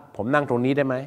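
ordinary delivery

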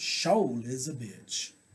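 Deep South Alabama accent. Saying a phrase the way they say it in Alabama, Alabama accent. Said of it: "How they say it in Alabama?".

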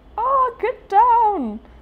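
dramatic, alarmed shout, very high-pitched and slow.

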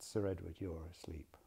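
very gentle, soft, coaxing voice. Retelling gently trying to wake a sleeping sitter: imitating saying it very gently. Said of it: "so very gently I said".

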